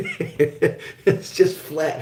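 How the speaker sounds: very slow, high-pitched laughing drawl.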